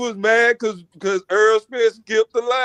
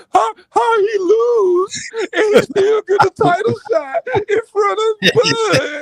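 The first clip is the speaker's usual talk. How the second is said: acted-out, very high, slow, whiny crying; 10 semitones higher than usual. Retelling a friend's complaint after a lost title shot: imitating someone crying and whining. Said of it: "You remember you was crying and whining".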